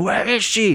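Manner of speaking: high-pitched, loud mock scream. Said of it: "He starts screaming".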